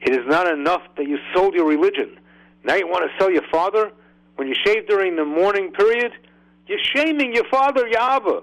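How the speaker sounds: put-on very high, intense, rising scolding shout. Quoting a rabbi's rebuke to the man who asked: retelling an intense shout. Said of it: "He said in a very intense tone".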